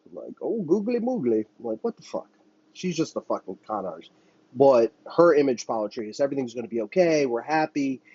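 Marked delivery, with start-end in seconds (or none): 0.4-1.5 fake southern drawl, pitched very high. Mocking a politician's put-on accent: Kamala Harris fake southern drawl. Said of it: "try to have a southern drawl".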